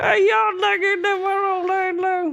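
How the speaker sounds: put-on Appalachian accent. Joking that Jesus sounds like he's from Appalachia: Jesus with an Appalachian accent. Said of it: "It's like he's from Appalachia".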